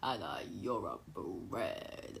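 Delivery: very quiet, low, deep put-on voice. Addressing Hannah as a joke, in a put-on low voice. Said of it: "Do you know why I keep doing this low voice?".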